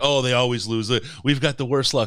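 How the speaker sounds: high, loud, frightened, doom-laden, terrified fretting. Describing a nervous fan seated nearby at a game; imitating a terrified fan. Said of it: "She was terrified".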